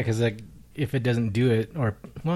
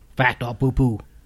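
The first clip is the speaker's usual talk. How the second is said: put-on Cajun accent, louder; 2 semitones higher, 6 dB louder than usual. Host announcing a show segment, in a put-on Cajun accent. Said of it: "I'm trying to say it in Cajun style".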